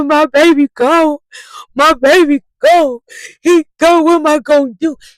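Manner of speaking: mad, angry, pitched very high, very slow, drawn out. Retelling what someone said when he was mad: imitating someone mad. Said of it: "He was mad".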